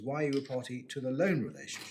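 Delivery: LOAN stressed hardest, falling at the close.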